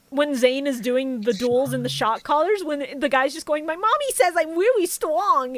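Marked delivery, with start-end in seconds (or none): 3.6-5.5 high-pitched anime hero voice. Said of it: "That is the closest to the Goku voice".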